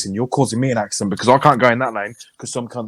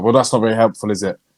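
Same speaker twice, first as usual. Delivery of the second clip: ordinary talk, nothing marked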